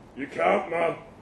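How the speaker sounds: muttered. Reading a story, Danny speaks to the narrator sitting beside him, muttered. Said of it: "he muttered".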